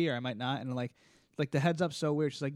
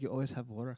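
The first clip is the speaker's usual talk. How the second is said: put-on Russian accent, quieter; 3 semitones lower, 5 dB quieter than usual. Quoting a woman who messages him while he's working, imitating a Russian-sounding accent. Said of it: "That sounds Russian".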